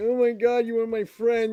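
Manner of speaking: mock, put-on crybaby whine. Mocking a weak segment: imitating Apollo whining like a crybaby. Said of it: "He sounded like a little crybaby".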